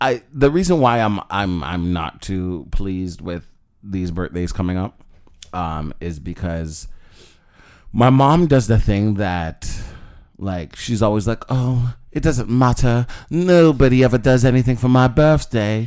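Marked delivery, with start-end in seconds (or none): 11.5-15.9 put-on British accent, high, loud. Retelling what mom always says about birthdays: imitating mom in a British accent. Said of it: "British accent".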